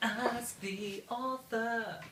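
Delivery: dramatic announcer voice, high, slow and drawn out.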